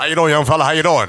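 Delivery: very loud, high-pitched holler. Talking about an announcer one speaker sees at work, the other does an Austin Carr impression. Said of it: "he really talks like that in real life".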